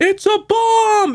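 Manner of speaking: very high, slow, drawn-out scream.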